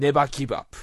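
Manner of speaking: loud, rousing, belted slogan-like delivery.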